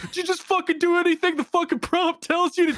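very high-pitched screaming outburst. Retelling a game scene where the stabbed alien reacts: imitating Gene screaming.

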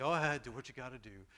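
put-on sleepy, sweet voice. Retelling the wife's reply when woken, imitating someone speaking sleepily. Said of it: "and sleepily said".

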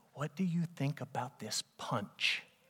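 secretive, hushed, breathy, very quiet whisper. Retelling how a woman at her party leaned over to ask something, imitating her soft voice. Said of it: "her voice gets real soft".

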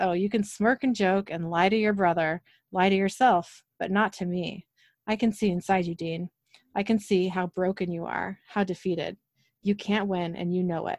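ordinary delivery

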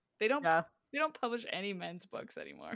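heavily ironic, tongue-in-cheek, swooping sarcastic sing-song. Joking with the other speakers in a sarcastic tone. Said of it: "saying that in a sarcastic way".

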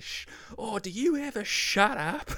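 very high pitched, drawn out and slow. Retelling a scene, quoting a character: imitating Les. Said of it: "you just hear Les say".

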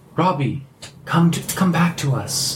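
put-on childlike little girl's voice. Describing a voice heard from right behind you, in a little girl's voice. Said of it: "in a little girl's voice".

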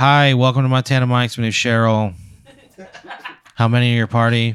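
bored, indifferent, uninterested voice. Playing a steakhouse hostess greeting a customer: bored indifferent hostess. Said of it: "she doesn't give a fuck".

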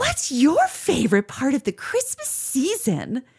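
cheesy princess voice, high and sing-song. Leaving a show with a girlfriend, doing a cheesy Christmas princess impression. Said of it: "like cheesy Christmas princess impression".

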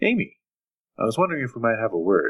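kindly, genial, warm, friendly male voice. Narrating to a player, a man's voice calls to their character from the shadows; friendly, warm male voice. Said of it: "It is friendly, it is warm, it is a male voice".

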